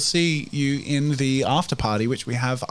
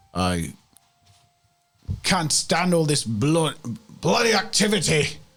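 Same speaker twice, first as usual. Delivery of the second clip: put-on Scottish accent, higher; 3 semitones higher than usual. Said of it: "he's got more of a Scottish".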